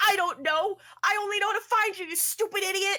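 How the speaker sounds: angry snap, very high, very loud, shrill. Voicing a character snapping back at a panicking companion: angry in-character snap. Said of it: "a Guideward apparently turns and says".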